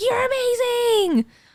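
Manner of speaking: shrill, very high, excited screaming. Recalling shouting from the car at girls in costumes: retelling screaming at people. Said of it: "I'm like screaming at these girls".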